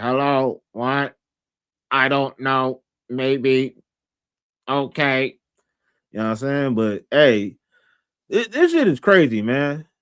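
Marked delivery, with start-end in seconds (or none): 0.0-5.4 flat, very slow, drawn-out robotic voice. Describing how Queen Latrice talks, the speaker imitates her robot-like voice. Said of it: "She sounds like a robot when she be talking".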